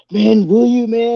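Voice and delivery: drawn-out relieved voice, very high and loud. Retelling how a man answered your offer to help: imitating a relieved voice. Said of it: "there was just a relief in his voice".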